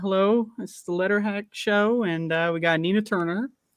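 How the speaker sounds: hesitant, halting host voice filled with uh. Doing an impression of another speaker hosting a show: Matt impression. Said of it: "Do an impression".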